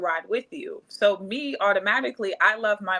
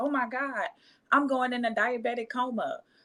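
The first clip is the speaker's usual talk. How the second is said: faked fright, fake panicked outburst; 3 semitones higher, 4 dB quieter than usual. Retelling how the driver who hit them acted: imitating a man faking panic. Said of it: "he starts shaking".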